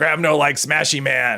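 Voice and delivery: big brute monster voice. Reading a game prompt about the Hulk aloud: Hulk voice. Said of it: "Gotta do the voice too".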